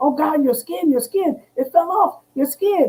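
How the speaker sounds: high-pitched screaming at the top of the lungs. Retelling what the husband screamed on seeing the burned skin: imitating husband screaming. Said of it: "he's literally screaming".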